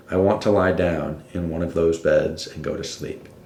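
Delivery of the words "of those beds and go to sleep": normal talking voice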